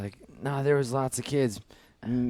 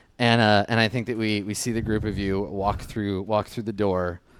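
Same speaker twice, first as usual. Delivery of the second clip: plain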